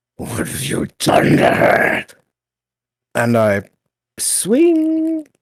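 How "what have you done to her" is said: furious, seething, rough-edged in-character delivery. Voicing a character confronting a bloodied skeleton: seething in character. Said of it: "still wielding my shield and seething".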